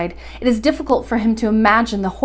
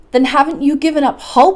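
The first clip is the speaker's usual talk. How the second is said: exasperated, vexed, irritable cry; 4 semitones higher, 4 dB louder than usual. Narrating a companion questioning the professor: crying out irritably. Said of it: "I cried irritably".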